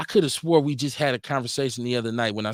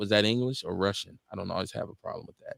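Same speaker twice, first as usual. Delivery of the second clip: ordinary talk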